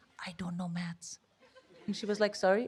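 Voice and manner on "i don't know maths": very quiet, barely there whisper. Retelling a job interview, confessing to a sympathetic interviewer: re-enacting own whisper. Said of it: "I literally started whispering".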